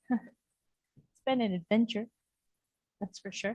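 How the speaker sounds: very hushed, soft, fighting off tears. A departing director saying final words, holding back tears. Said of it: "I'm gonna try not to cry".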